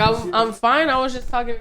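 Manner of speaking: plain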